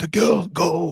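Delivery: rough, rasping, raspy voice. Voicing a figure who calls out from the darkness, in a raspy voice. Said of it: "A raspy voice".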